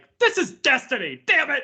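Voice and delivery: very high, fed-up, angry, exasperated outburst. Joking about spotting Destiny's look in other games, mock-angry outburst. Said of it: "I get so mad".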